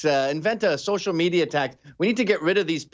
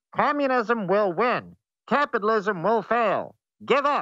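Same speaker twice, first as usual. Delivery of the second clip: megaphone-style announcer voice; 4 semitones higher than usual. Retelling old-timey propaganda messages they receive, in a bullhorn propaganda voice. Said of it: "sounds like it's on a bullhorn".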